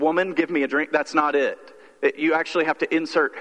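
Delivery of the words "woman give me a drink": curt, harsh, mean-sounding, higher. Showing how a bible line can sound when read literally: curt, mean-sounding command. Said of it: "it sounds sort of like curse or, uh, mean".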